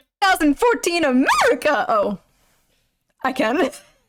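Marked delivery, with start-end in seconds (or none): 0.2-1.8 old-style put-on video voice, high, swooping, sing-song. Reacting to an old video, redoing her past voice from it. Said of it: "can my voice even do that anymore?".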